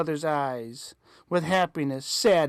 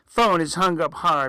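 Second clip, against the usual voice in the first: ordinary delivery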